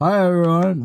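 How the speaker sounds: very high, loud, spoken through stuffed cheeks. Roleplaying, the speaker has her character greet everyone, talking with mouth full. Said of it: "with a mouthful of biscuit".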